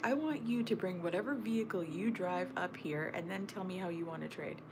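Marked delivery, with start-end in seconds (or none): none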